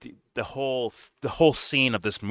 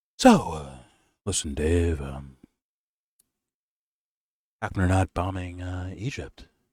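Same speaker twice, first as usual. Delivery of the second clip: low, fake-clever pseudo-intellectual voice; 4 semitones lower than usual. Retelling a guy's question to dave: mock pseudo-intellectual voice. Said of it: "In this pseudo intellectual voice".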